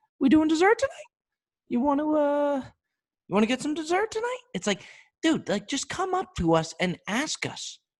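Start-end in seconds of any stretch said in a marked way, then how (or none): 0.2-4.4 unsure, nervous, hesitant, very high-pitched voice. Imitating a waiter nervously asking about dessert: high nervous voice. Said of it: "their voice gets all high".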